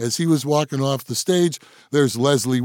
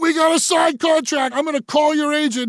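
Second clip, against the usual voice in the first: shrill, very high-pitched yelling; 14 semitones higher than usual. Recounting yelling at an act locked in the dressing room, retelling a yell. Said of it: "I'm yelling at Leslie".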